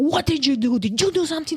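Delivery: mock harsh, curt delivery. Retelling what the returning officer demanded: imitating abrupt aggressive talk. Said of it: "talking to me really abrupt and, and aggressively".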